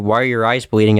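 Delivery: normal talking voice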